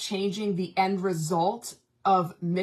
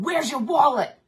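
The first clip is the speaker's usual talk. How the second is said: furious, anger-fuelled yell, pitched up; 5 semitones higher, 6 dB louder than usual. Retelling confronting someone suspected of stealing, retelling an angry yell. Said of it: "And all this anger came out".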